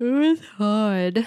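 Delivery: speaking through a yawn. Podcast host saying Saturday's was hard, yawning. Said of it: "I love how much you're yawning".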